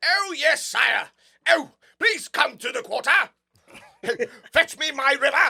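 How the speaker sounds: put-on shrill, very loud, old-fashioned eighteenth-century servant voice. Showing friends how they do eighteenth-century castle talk: eighteenth-century castle talk. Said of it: "I do eighteenth century castle talk like".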